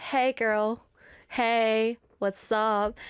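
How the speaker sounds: very slow, easygoing, laid-back casual guy voice. Imagining what the guitar would say if dated: voicing the guitar as a casual guy. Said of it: "the guitar is kind of like".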